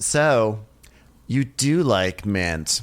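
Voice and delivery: put-on passive aggressive tone. Retelling how B speaks to Molly: imitating passive aggressive remark. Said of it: "B is so passive aggressive".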